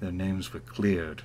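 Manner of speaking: very quiet, low voice. Narrating a scene where Ursilia stands up again, in a lower voice. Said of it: "Like in like a lower voice".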